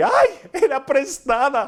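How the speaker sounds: high, loud, slow anguished cry of dismay. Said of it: "él grita y dice".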